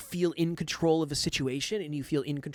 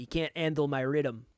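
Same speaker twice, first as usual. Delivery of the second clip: put-on Quebec-style French accent. Quoting a French Canadian fighter about an opponent: imitating George Saint Pierre's accent. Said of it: "in his accent, he said".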